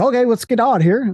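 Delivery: high-pitched put-on Canadian accent. Mocking how a canadian talks: imitating a canadian accent with soft vowels. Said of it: "has that soft fucking vowel where it's like".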